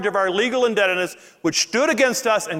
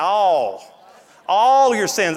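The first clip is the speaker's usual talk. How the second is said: Louisiana accent, every word stretched very slow; 3 dB louder than usual. Pastor preaching to his congregation, stretching one word: drawn-out louisiana accent. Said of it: "I can say all with a Louisiana accent".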